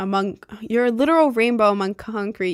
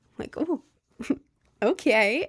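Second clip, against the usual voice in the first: ordinary talk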